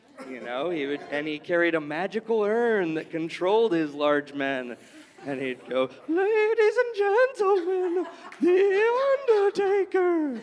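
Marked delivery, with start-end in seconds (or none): 6.1-10.5 very high, slow, drawn-out spooky ghostly voice. Imitating an older gentleman's announcement, in his ghostly voice. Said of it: "both looked and sounded like a ghost".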